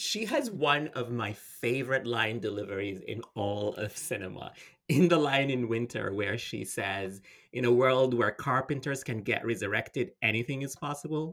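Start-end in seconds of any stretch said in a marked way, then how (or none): none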